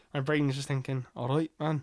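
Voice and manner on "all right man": attempted put-on Scottish lilting accent. Showing what comes out when trying an irish voice: put-on scottish accent. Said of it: "I'm doing Scottish".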